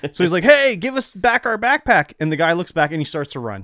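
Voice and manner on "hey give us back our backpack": very high, loud shout. Retelling how a companion called out to a man with a backpack: imitating someone yelling. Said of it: "decides this is the time I'm gonna yell at the guy".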